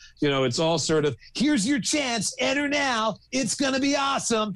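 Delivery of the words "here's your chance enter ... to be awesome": put-on very high, nineties teen commercial announcer voice. Imitating nineties advertising voices aimed at young people: youth advertising announcer voice. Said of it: "advertising voices aimed at young people".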